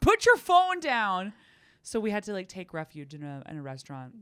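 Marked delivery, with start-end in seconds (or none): 0.0-1.3 furious angry yell, higher and louder. Retelling a companion's reaction during a storm: imitating someone furious. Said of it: "He's furious at me".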